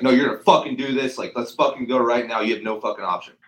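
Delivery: loud, forceful, pushy, bullying aggressive delivery. Giving an example of aggressive communication: aggressive. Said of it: "Aggressive is like".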